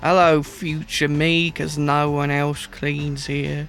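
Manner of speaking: attempted London Cockney accent. Told to go cockney while painting: cockney accent. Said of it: "Go Cockney".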